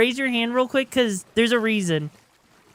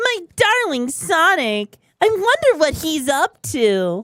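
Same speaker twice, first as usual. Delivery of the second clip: high, put-on character voice; 5 semitones higher than usual. Showing the range of a three octave voice: Amy Rose voice. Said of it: "Amy Rose here".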